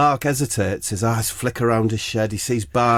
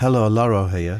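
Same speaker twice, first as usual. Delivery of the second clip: ordinary talk, nothing marked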